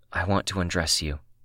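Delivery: ordinary delivery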